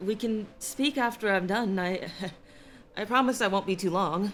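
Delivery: unsteady, quavering voice. Behind a door, answering someone who wants in, in a wavering voice. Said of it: "wavering voice".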